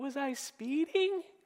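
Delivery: mock soft, high voice with a smile. Retelling how a woman answered a cop at her car window, imitating her smiling voice. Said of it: "Just in that voice".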